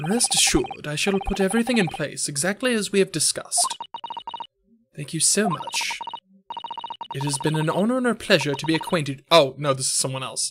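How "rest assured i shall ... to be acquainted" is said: breathy, whispered, hushed put-on British accent. Playing a character thanking Mister Sholmes, in a put-on British character voice. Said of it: "so I'm doing the voice".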